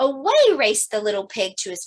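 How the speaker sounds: plain reading voice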